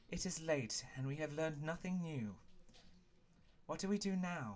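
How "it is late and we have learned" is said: ordinary delivery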